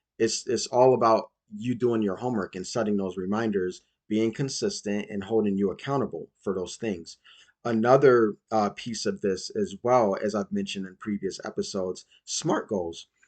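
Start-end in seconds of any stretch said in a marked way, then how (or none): 12.3-13.1 breaking, cracked voice, cracking mid-phrase. Host listing goal-setting steps mentioned in previous episodes: voice cracking. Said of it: "as my voice just cracked".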